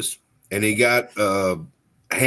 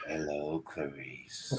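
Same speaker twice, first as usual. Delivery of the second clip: very deep, very low, very soft hushed voice; 8 semitones lower, 20 dB quieter than usual. Suggesting what to say after the basement lights go off: Silence of the Lambs impression. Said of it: "you just go like this".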